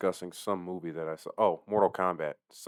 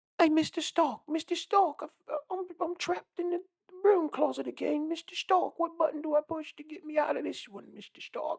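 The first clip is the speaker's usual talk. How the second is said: very high-pitched mocking voice. Mocking an actor who cannot hide his accent: Tom Holland impression. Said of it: "Tom Holland sucks at doing that".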